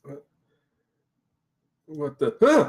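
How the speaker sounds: scared, startled, freaked-out stumbling stammer. Voicing a character who wakes to a giant otter nuzzling him: freaked out. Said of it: "He's a little freaked out".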